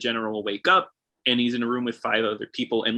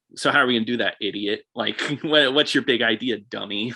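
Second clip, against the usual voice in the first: plain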